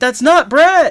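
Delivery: very high, shrill, loud yell. Retelling a movie scene where a fired girl yells: imitating someone yelling. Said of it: "starts yelling".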